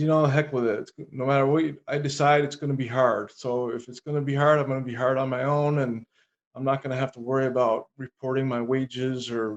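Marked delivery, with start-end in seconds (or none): none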